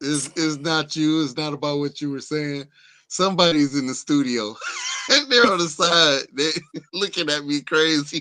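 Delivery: very loud, high talking while cracking up laughing. Apologizing to the other speaker for cracking up: laughing while talking. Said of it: "I'm over here cracking up".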